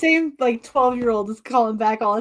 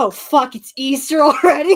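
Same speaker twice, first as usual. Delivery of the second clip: panicked voice, higher and louder; 4 semitones higher, 7 dB louder than usual. Retelling the boss seeing Ash Wednesday ashes: imitating a panicked boss.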